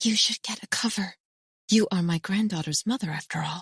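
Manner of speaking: half-hidden stage whisper, loud enough to carry. Reading a story where an older woman warns the narrator: loud whisper. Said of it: "says in a loud whisper".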